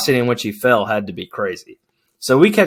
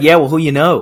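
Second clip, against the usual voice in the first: loud, convincing put-on Boston accent; 4 semitones higher, 5 dB louder than usual. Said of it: "a good impression".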